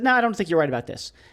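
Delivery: plain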